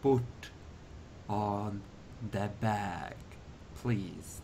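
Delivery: very quiet, oddly persuasive, strangely compelling voice. Game master voicing a character addressing a player, in a strangely compelling voice. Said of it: "He says in a strangely compelling voice".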